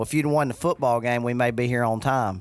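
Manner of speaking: ordinary talk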